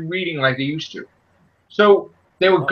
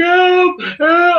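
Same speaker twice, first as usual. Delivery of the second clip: put-on crying voice, much higher pitch; 12 semitones higher, 5 dB louder than usual. Complaining about a movie, the speaker imitates Spider-Man crying for help. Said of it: "And he's crying like".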